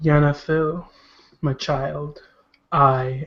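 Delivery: gentle, smooth, unsettling, eerie echoing multi-voiced tone. Game master voicing a stranger addressing a player's character, in a soft voice. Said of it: "He speaks in a soft voice".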